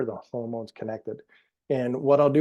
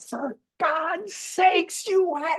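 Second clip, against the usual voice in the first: scream, then a higher-pitched scream. Retelling a doctor screaming at a big audience: imitating Christiane Northrup screaming. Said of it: "and she's screaming".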